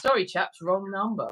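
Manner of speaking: ordinary talk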